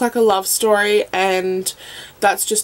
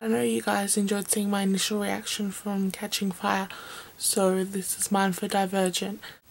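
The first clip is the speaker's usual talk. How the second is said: whispering, quieter; 10 dB quieter than usual. Recording her reaction at home while everyone else sleeps, whispering. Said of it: "I'm kind of whispering".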